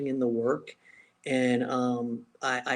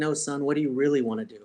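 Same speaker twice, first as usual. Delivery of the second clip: stern tone, imitated. Retelling how a coached kid's father questioned them: imitating a stern tone. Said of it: "he looked at me kinda sternly".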